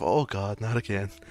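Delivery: muttering under breath. Voicing a tavern keeper who sees a customer coming: whispering to herself. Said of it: "she kinda whispers to herself".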